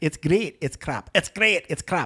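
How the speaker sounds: comic, put-on Scottish accent. Speaker retells a comedian's bit about Scotland, in a Scottish accent. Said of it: "in Scottish accent".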